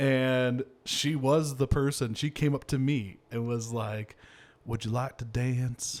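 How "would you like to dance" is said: Arkansas accent impression. Speaker retells a girl coming up to ask for a dance, imitating an Arkansas accent. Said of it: "Like Arkansas, I don't know if that does the justice for the accent".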